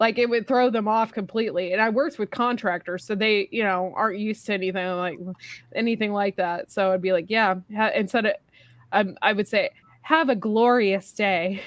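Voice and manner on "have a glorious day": play-acted, slow drawl laying on the sarcasm. Retelling own words to customers as a cashier: imitating own sarcastic tone. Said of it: "I was so sarcastic most of the time".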